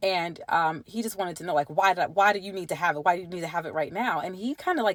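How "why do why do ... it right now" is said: worked-up, agitated, exasperated, frustrated tone. Retelling how her partner asked why she needed the paper: imitating someone agitated. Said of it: "he got really agitated".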